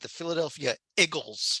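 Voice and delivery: South Philly accent. Bringing up the favorite team's picture on screen share: South Philly accent. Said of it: "spoken in true South Philly accent".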